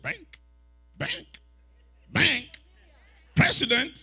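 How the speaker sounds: incredulous, surprised, shifted rising intonation. Retelling reacting to a man saying he is a bank president, changed intonation. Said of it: "And I changed my intonation".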